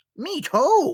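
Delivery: high put-on monster voice. Showing the other speaker how they would voice a character, in a Toad voice. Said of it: "He's a Power Rangers monster?".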